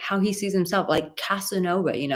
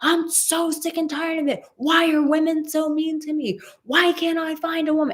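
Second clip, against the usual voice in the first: very high-pitched screaming, ranting tone; 9 semitones higher than usual. Retelling how a man ranted about online dating, imitating someone screaming. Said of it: "And he's screaming".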